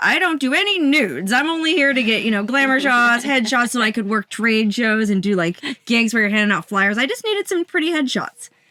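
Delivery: plain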